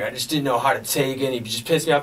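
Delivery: plain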